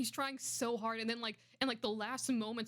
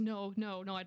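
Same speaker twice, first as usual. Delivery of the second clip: put-on panicked voice; 2 semitones lower than usual. Retelling a scene where Rex is freaking out: imitating Rex freaking out. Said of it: "he's, like, freaking out".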